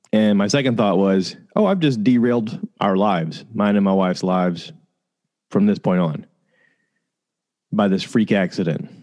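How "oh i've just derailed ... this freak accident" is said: ordinary talk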